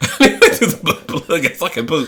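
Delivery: giggling, laughing through the words. Picturing needing the bathroom during a podcast chat, laughing while talking. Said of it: "I'm laughing just at the thought of it".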